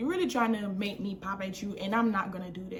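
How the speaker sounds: ordinary talk, nothing marked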